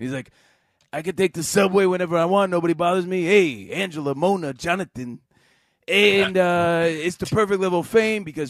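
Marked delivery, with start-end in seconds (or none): 0.9-5.2 put-on New York guy voice, higher and louder. Retelling a talk show guest bragging about fame: Tony Danza impression. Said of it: "Do the voice".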